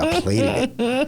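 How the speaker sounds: high, slow, fancy voice. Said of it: "I got fancy".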